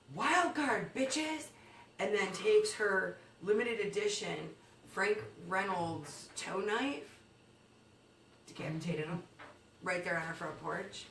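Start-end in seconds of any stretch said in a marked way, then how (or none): 0.2-1.5 yelling, high-pitched, mock yell.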